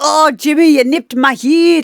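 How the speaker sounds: put-on Scottish accent, done for show. Switching into a Scottish accent for a quick line to Jimmy.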